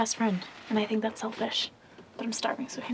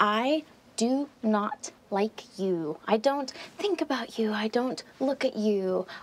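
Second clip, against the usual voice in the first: very slow, deliberate, each word one at a time. Answering someone directly after an exchange of insults, speaking really slowly. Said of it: "I'm gonna say this real slow".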